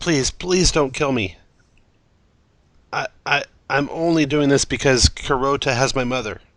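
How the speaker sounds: begging, desperate tone. Voicing a captive who begs the heroes for his life: begging for his life. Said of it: "he begs for his life".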